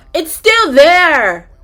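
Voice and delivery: loud exclamation.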